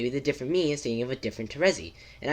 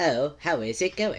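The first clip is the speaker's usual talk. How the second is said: slow, drawn-out cartoon character voice. A speaker announces a voice, then greets the listeners in BFDI voice. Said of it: "I'm gonna do the B F D I voice".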